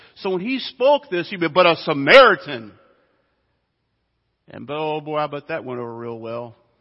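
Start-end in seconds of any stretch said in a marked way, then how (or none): 1.5-2.7 Samaritan strongly stressed, punched hard. Showing how Jesus would have spoken the line, with strong emphasis on Samaritan. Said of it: "the word Samaritans in the emphatic position".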